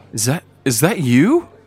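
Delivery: high, loud, surprised, joyful, elated.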